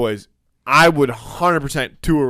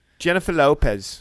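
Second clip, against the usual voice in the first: terrible, clearly put-on Australian accent; 2 semitones higher than usual. Prompted by the other speaker to say a name in Australian: bad Australian accent. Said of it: "Just try saying [name]".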